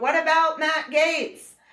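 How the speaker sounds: acted-out very high teasing shout, called across. Retelling own shout at a protester: retelling own yell. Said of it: "then I'd yell out".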